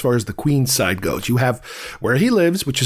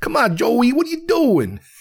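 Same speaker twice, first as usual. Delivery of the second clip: very high put-on New York accent; 10 semitones higher than usual. Describing how movies portray New Yorkers, in a stereotypical movie New York accent. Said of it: "they have this guy talking like this".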